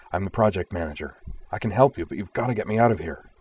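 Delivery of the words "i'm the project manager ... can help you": ordinary delivery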